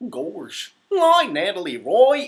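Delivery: booming, slow, swooping cartoon-dog voice, belted out. Saying hi to a viewer who asked for it, in a Goofy voice. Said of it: "Can you do a Goofy voice and say hi to me?".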